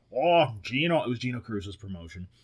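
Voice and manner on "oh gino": put-on heavy Midwestern accent, higher pitch. Retelling a locker room talk about a match: imitating a heavy midwestern accent. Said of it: "in his heavy Midwestern accent".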